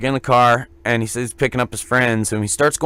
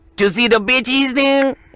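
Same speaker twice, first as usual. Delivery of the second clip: very high-pitched, really badly accented English; 12 semitones higher than usual. Retell what he said to you, looking back at you in the car, imitating someone's horrible English. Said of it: "It sounded more like".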